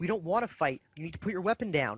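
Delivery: light, mild yell. Voicing the one with the shield, who yells back at a player: yelling back. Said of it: "he yells back".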